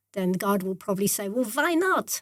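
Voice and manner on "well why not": put-on Yiddish accent with pitch raised a touch higher. Imagining God answering a question, God in a Yiddish accent. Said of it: "in a Yiddish accent".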